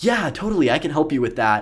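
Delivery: bright, cheery, upbeat, sing-song customer-service voice. Showing the voice used besides the regular one, upbeat customer service voice. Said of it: "my customer service voice".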